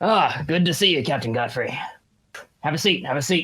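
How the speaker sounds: rough, gruff character voice. Narrating a role-play scene, voicing a character greeting Captain Godfrey in a gruff voice. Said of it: "you hear a gruff voice on the other side say".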